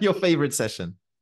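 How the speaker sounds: dry sarcasm. Reacting to the mention of more heat training, sarcastic. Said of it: "She says sarcastically".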